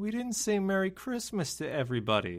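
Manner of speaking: very sad, sorrowful, crestfallen, downcast voice. Retelling what was said right after the podcast episode was shut off: imitating a very sad voice. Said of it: "in a very sad voice".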